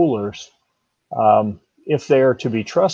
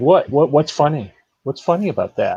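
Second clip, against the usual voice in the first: put-on dead serious, dry deadpan delivery. Retelling showing a funny mug to a fourteen-year-old: imitating own deadpan delivery. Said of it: "'cause I was just deadpanning it".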